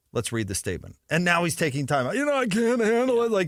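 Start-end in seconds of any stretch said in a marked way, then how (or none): 2.1-3.3 put-on very high voice, sobbing words through tears. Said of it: "through his tears".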